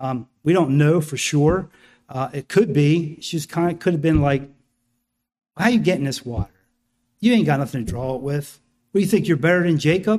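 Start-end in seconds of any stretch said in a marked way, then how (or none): 5.6-10.2 mock sarcastic edge in a woman's voice. Acting out how the woman at the well may have answered: imitating a sarcastic woman. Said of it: "Was there some sarcasm in her voice".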